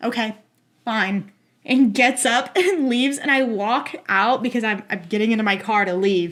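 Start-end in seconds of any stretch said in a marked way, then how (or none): 0.0-1.3 flat put-on deadpan. Retelling how a man kept staring and then answered, retelling a deadpan reply.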